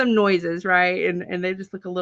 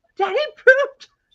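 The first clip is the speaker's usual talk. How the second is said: put-on little kid screaming, shrill and very high; 6 dB louder than usual. Retelling what the little girl screamed while everyone laughed: imitating a child screaming. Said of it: "like just screaming".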